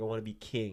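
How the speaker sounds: ordinary talk, nothing marked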